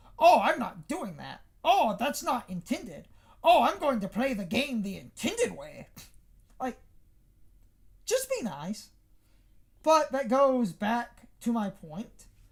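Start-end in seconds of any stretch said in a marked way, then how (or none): 0.2-5.9 mock-indignant, huffy, all-defensive tone. Mocking people who reject speedrun glitches: imitating huffy defensive people. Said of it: "get all huffy and defensive of".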